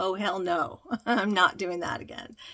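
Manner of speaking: firm tone, loud and laughing. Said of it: "The man was like".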